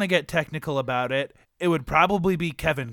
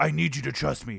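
put-on gruff superhero voice; 4 dB quieter than usual.

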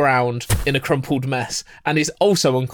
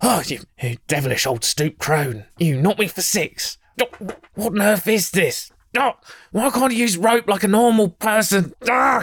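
put-on huffy, spluttering, flustered old man voice, pitched up; 6 semitones higher than usual. Voicing a man who wakes tied up and shuffles away, flustered protest. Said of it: "shuffles away from her, being like".

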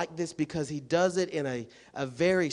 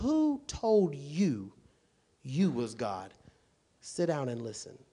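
bossy, commanding tone with swooping pitch. Retelling God's words to Job in a bossy commanding tone: talking like a boss. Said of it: "God is talking a boss right here".

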